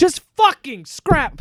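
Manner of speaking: shrill, piercing, very high, loud full-throated scream. Reacting to news of another movie delay: screaming loudly. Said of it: "I don't mean to scream so loud".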